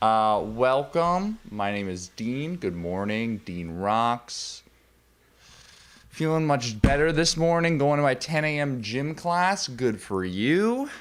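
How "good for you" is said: tone that sounds sarcastic. Reacting to a message read out on air, sounding unintentionally sarcastic. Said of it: "I feel like it came off sarcastic".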